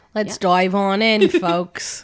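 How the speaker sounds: put-on Australian accent. Kicking off the episode for the listeners: Australian accent. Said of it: "I was trying to do Australian".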